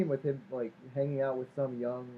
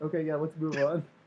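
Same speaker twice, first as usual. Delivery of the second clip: put-on unbothered, dismissive, offhand tone; 3 semitones higher than usual. Imitating how a character quickly delivers a line: quick, dismissive delivery. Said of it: "he sounds, like, very, like, quick with it".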